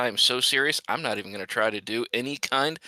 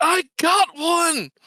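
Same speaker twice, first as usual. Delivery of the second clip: shrill, very high, loud yell; 8 dB louder than usual. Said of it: "I'm going to yell".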